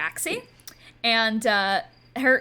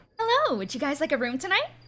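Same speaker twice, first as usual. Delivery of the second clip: high, sing-song cat-creature voice; 5 semitones higher than usual. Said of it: "she kind of looks up at you all and goes".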